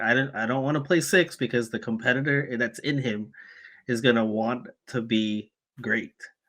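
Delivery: ordinary delivery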